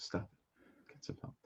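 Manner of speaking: slow, breathy, drawn-out whisper. Acting out a gif from a chat message: Michael Jordan gif voice. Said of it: "I'm trying to act out the gif".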